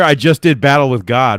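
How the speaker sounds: normal talking voice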